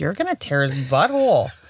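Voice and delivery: put-on friendly Minnesotan accent. Retelling what the speaker told her yesterday: Minnesotan accent. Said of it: "that was very Minnesotan".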